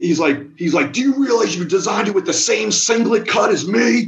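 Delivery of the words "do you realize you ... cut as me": mock furious, indignant, pitched-up delivery. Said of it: "he was furious".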